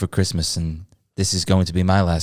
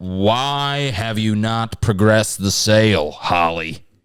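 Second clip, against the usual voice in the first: put-on generic general American accent; 3 semitones higher than usual. In a role-play, one character questions another, generic American accent. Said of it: "do generic American".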